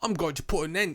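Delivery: slipped into a British accent. Quoting a movie villain's line, the host slips into a put-on British accent. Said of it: "that was so British".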